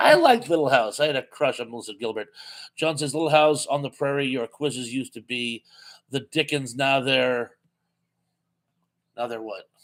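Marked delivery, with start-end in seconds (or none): none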